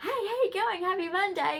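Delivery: put-on chirpy voice, very high-pitched and loud. Retelling a past greeting at work: imitating own chirpy greeting. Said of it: "I'd go to work chirpy".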